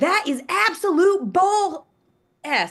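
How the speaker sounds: mock very slow, loud, high, drawn-out old-lady yell. Retelling a fan's reaction to a foul call on a plane: imitating an old southern lady screaming. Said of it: "old Southern lady just screams".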